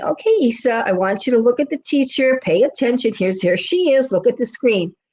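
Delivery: put-on very loving, gentle, sweet, patient coaxing mother voice. Retelling how a mom coaxed her daughter during a meeting: imitating a mom speaking sweetly and lovingly. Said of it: "very sweetly, very nicely, very lovingly".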